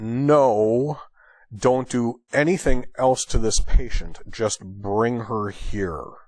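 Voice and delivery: deeply exasperated, fed-up, drawn-out "no". Retelling a doctor answering a paramedic over the radio, mock-exasperated. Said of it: "in a very exasperated voice".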